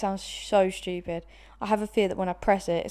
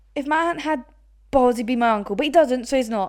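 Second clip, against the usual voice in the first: loud, pitched-up put-on Liverpool football-pundit accent; 5 semitones higher, 7 dB louder than usual. Doing a football pundit in an accent challenge: imitating a football pundit. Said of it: "The football pundit".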